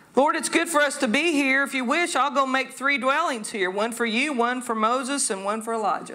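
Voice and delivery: ordinary talk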